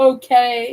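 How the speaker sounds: put-on snarky tone on "okay". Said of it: "she was super snarky".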